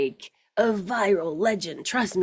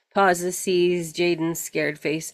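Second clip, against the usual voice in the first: ordinary talk, nothing marked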